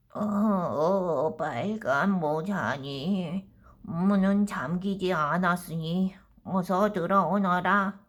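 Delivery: put-on grandmother voice. Reading a story aloud, the wolf answering at the door: wolf disguising voice as grandma. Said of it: "늑대가 목소리를 꾸며 대답했습니다".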